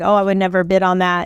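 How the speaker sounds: normal talking voice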